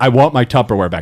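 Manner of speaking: firm, stern, threatening delivery. Retelling a threat from Luke's wife over Tupperware: imitating Luke's wife threatening. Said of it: "threatened my life if I didn't bring".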